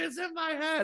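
very high-pitched, frantic yelling. Retelling a man yelling in Jake's face, retelling someone yelling. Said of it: "but he's like yelling".

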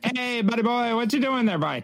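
very high, cartoonish, exaggerated Canadian accent. Talking about Canadians up north, the speaker imitates how they sound: South Park Canadian accent. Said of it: "they sound exactly like South Park depicts Canadians".

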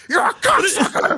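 acted, very high-pitched, mild screaming. A speaker recalling a movie scene where a child gets screamed at, imitating Nick Nolte screaming. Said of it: "getting screamed at by Nick Nolte".

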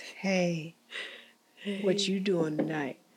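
put-on seductive voice, low and soft. Imagining a listener calling in to the show, in a put-on sexy voice. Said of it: "said in a sexy-ass voice".

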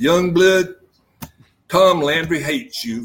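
put-on South Carolina accent. Act out how he starts out talking to you, imitating a South Carolina accent. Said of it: "with that South Carolina accent".

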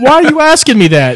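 acted, very high, furious lost-it yell. Retelling yelling at a parent asking about a losing game: imitating own angry yell. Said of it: "I yelled at, I mean, I lost my shit".

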